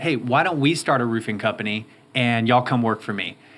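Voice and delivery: ordinary talk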